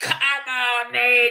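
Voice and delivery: mock screaming, high-pitched. Recounting a man in front of the speaker screaming at him, imitating the screaming. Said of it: "he was screaming at me".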